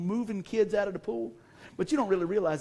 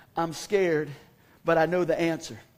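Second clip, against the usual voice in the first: ordinary talk, nothing marked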